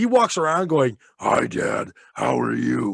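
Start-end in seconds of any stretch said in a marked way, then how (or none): 1.2-3.0 rough, creaky, slow, very drawn-out demon voice. A father imitates his son greeting him, in a demon voice. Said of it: "He does the demon voice all day long".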